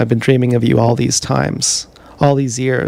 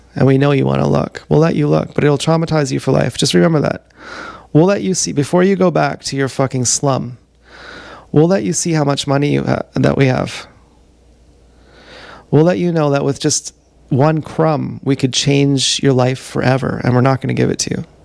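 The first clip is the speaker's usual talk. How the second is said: ordinary delivery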